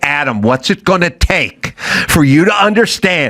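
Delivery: patronizing, condescending sing-song lilt. Imitating people who talk down to the speaker: imitating a sing-songy condescending tone. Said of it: "in a sing-songy, condescending, shitty way".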